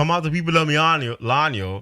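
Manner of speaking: relaxed, casual Jamaican patois, not yelling.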